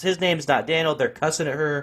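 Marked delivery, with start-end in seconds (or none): 0.0-1.0 toned-down, insistent yell. Retelling a store lady defending him to the cops: imitating someone screaming at cops. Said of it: "was screaming at the cops".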